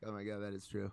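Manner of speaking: plain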